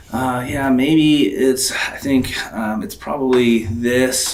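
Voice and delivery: unsure, doubtful tone, slow and hesitant. Showing a statement that sounds like a question: hesitant, uncertain tonality. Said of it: "Are you using a tonality that's like".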